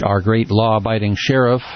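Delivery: normal talking voice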